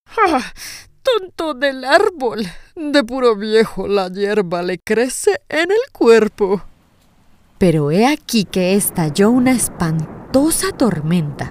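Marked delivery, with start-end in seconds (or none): 0.2-6.6 proud, puffed-up, strutting exclamation. After the old willow shakes its head, the buckwheat answers, proud exclamation. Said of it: "pavoneándose de puro orgullo, exclamó".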